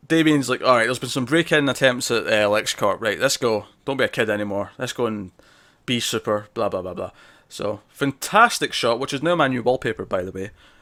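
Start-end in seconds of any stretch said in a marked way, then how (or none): none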